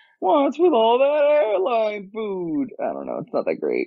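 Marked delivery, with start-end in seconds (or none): 0.2-2.7 rough, pitched-up, loosely comic voice. Doing a joke line in a Jerry Seinfeld impression. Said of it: "a pseudo Jerry Seinfeld".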